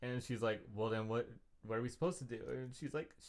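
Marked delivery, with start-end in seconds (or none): 0.7-2.4 put-on mild annoyance, faster. Retelling what she said to Rachel, mock mildly annoyed. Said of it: "mildly annoyed at the whole at the proposition".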